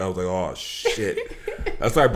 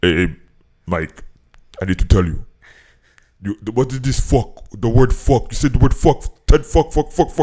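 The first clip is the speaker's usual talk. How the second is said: put-on Haitian-accented speech; 3 semitones higher, 8 dB louder than usual. Retelling the father's reaction to swearing on the podcast: imitating dad's Haitian accent. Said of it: "my dad has this like really really deep Haitian accent".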